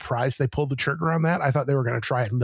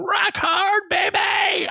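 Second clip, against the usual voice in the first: very high, loud shouted cheer; 4 dB louder than usual. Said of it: "when Juice came out and I screamed".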